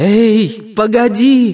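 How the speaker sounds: very high shout with long stretched-out "Эй". Narrating a story, the heroine shouts upward toward a patch of light: shouting. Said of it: "закричала Жанна".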